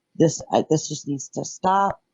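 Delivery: ordinary talk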